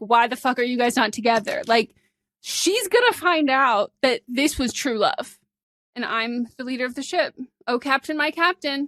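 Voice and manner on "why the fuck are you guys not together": put-on angry ranting. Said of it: "crashing out on her story".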